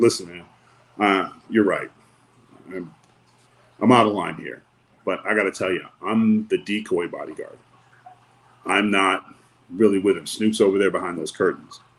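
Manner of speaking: ordinary delivery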